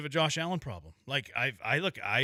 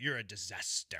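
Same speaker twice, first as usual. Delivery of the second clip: put-on soft voice with slight non-English accent; 6 semitones lower, 8 dB quieter than usual. Retelling a funny line from an ex-wife on The Valley: imitating The Valley ex-wife's slight accent. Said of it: "a little bit of an accent 'cause she's, like, not English".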